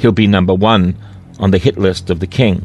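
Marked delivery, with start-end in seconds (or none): none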